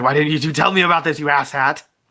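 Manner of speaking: mock annoyed, angry, scolding tone.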